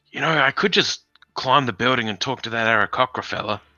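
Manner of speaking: loud whispered aside. A player's character talks to companions near a guard across the street, in a stage whisper. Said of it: "in a kind of stage whisper".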